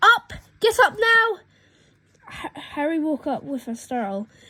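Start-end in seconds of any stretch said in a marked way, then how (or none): 0.0-1.4 shrill, screeching, very high shout. Reading the aunt waking Harry in the morning, as Aunt Petunia's shrill voice. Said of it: "shrill boy voice which made up the first noise".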